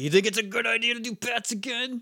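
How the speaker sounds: put-on, very high, shrill, angry scolding yell. Retelling how a woman yelled at someone, retelling her angry yell. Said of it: "she yelled at Rygog like".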